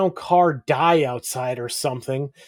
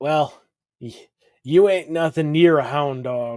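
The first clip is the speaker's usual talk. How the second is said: acted, utterly defeated voice. Recapping an episode, the speaker imitates Herman's defeated voice. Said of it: "the most defeated voice ever".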